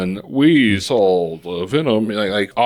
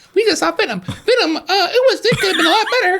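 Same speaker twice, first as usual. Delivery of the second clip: put-on cartoon mouse voice. Joking about how to say the film title, sounding like Mickey Mouse. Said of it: "Why do you sound like Mickey Mouse?".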